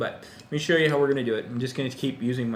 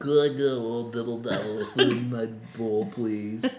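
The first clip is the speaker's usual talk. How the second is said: goofy, silly talking-dog voice. Voicing what their dog would ask for at mealtime: voicing Hachi the dog. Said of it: "He talks our dog in that voice".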